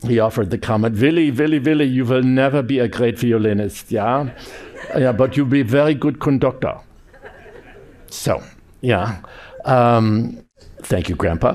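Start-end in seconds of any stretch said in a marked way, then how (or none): 1.0-6.8 put-on strong Austrian accent, pitched high. Speaker quotes his grandfather's comment to him, in a strong Austrian accent. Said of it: "in his very strong Austrian accent".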